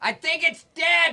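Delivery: projected yelling. Calling out to a far-off companion that the creature is dead: yelling across a distance. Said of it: "You can stop yelling".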